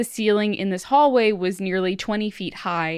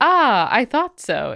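slow mystic fortune-teller voice; 3 semitones higher, 4 dB louder than usual. Describing the mother's sweeping guesses, imitating the mother: stereotypical fortune teller voice. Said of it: "in like a la stereotypical fortune teller".

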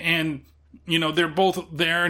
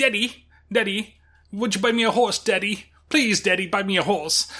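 put-on creepy child voice; 4 semitones higher than usual. Speaker recalls a scene from a TV episode, doing a South Park kid impression. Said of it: "it sounds exactly like that".

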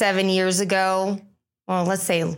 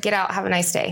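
put-on rude, dismissive voice. Retelling an advertiser turning down the magazine: imitating a rude advertiser. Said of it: "It was rude as could be".

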